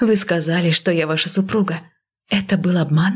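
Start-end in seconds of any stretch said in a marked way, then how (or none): none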